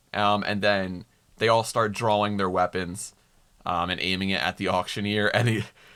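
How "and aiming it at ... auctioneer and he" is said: normal talking voice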